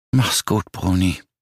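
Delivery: hushed, faint, barely audible whisper. At the bedside, Marie says goodbye to her dead friend in a barely audible whisper. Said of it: "flüsterte sie kaum hörbar".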